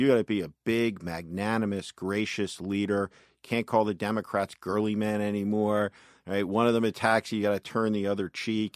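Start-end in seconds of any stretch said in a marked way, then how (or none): none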